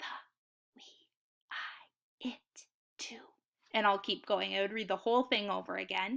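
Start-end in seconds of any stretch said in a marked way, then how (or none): 0.0-3.2 slow, hushed whisper with words drawn out. Showing readers how to practice snap words: whisper voice. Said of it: "Time two will be a whisper".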